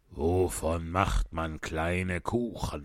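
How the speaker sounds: low, deep, gloomy kingly voice. Reading the story aloud, the narrator gives the king's question in a deep voice. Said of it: "sagte er mit tiefer Stimme".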